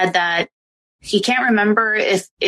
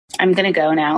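ordinary talk

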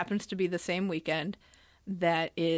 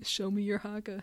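deliberately put-on creepy delivery; 2 semitones higher, 4 dB quieter than usual. Joking about meeting New Zealanders in Tokyo: mock creepy demand. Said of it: "that sounded really creepy".

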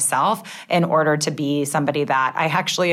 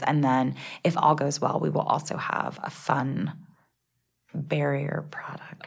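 hushed whisper, quieter; 7 dB quieter than usual. Sharing news of an unannounced launch, not wanting to jinx it: whispering. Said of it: "I'm whispering because I don't want to".

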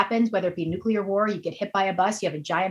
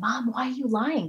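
put-on whisper, higher; 4 semitones higher than usual. Retelling asking a mom on the phone why she was lying: retelling a whisper. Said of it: "I whispered".

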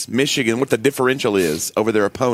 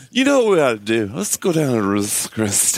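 put-on boozy, drunk, slurred speech. Teasing another speaker about how he says the restaurant's name: imitating drunk speech. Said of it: "you sound drunk saying Ruth's Chris".

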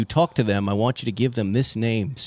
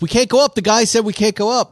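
very high, loud yell, sounding far away; 11 semitones higher, 8 dB louder than usual. Retelling going up a hill, imitating the son yelling from the gate. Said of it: "my son is yelling to me from the gate".

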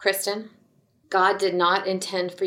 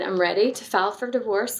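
plain

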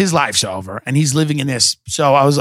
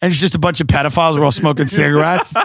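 ordinary talk, nothing marked

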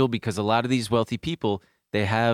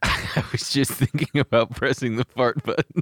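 laughing while speaking; 2 semitones higher than usual. Asked why they're laughing during a serious discussion, answering while laughing. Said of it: "Why are you laughing?".

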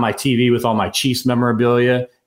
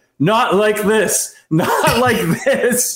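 put-on very high, very slow, drawn-out yelling; 10 semitones higher than usual. Retelling watching the end of a Chiefs game: imitating own past yelling. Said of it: "I remember literally yelling".

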